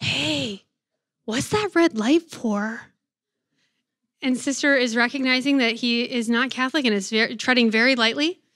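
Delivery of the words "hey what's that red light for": acted whisper, much slower. Retelling a boy in the chapel asking about the red light: retelling a whisper. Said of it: "And KJ whispers".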